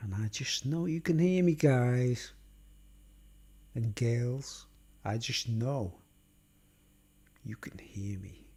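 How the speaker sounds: speaking softly and low. Testing a microphone for viewers and showing it catches quiet speech: talking really quietly. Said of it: "I can talk really quietly".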